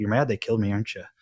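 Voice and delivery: dead serious tone of voice. Retelling a friend's question asked while staring dead in the eye: imitating someone speaking dead seriously. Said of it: "he looked me dead in the eye".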